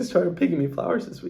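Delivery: choked-up, crying words. Talking about him picking flowers for the speaker this week, crying. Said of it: "I don't know why I'm crying about this".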